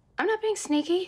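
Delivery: squeaky high voice. Denying being sneaky to the other speaker, voice up two octaves. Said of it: "That's two octaves".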